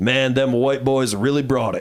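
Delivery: normal talking voice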